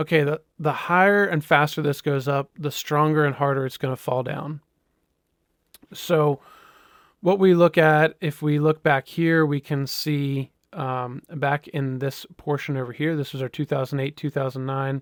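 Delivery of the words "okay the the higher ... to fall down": ordinary talk, nothing marked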